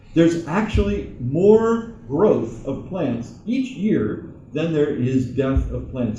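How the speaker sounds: slow, deliberate, careful delivery.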